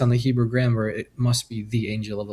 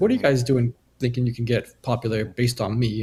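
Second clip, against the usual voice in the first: plain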